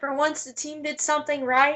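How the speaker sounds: ordinary talk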